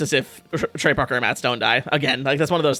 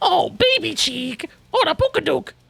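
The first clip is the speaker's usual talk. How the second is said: very high, raspy, swooping cartoon-mom voice. Showing the impression their girlfriend keeps doing: Marge impression. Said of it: "do the Marge impression".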